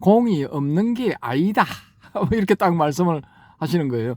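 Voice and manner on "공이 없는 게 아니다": Korean Gyeongsang dialect, Busan style. Recalling the monk's words called after him at the door: Gyeongbong's Gyeongsang dialect. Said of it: "부산 사투리".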